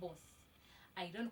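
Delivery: normal talking voice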